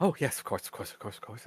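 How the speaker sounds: quick, rapid-fire, rushed rattled-off run of words. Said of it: "In her very usual kind of rapid fire, high pitched voice".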